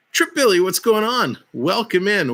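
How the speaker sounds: high voice breaking upward partway through. Commentating a game and welcoming a viewer by name, voice cracking. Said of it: "did my voice crack?".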